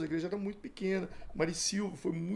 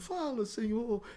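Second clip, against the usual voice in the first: put-on weeping, tearful, crying voice; 4 semitones higher than usual. Retelling a prayer meeting where people begged: imitating people crying while praying. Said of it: "E o povo chorando".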